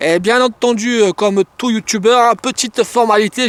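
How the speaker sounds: put-on accent from southern France. A YouTuber opening his video's usual formality, in a southern French gendarme accent. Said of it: "j'ai pris l'accent de la gendarmerie nationale du sud de la France".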